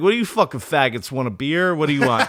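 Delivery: put-on rude, trash-talking tone. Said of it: "talk nice".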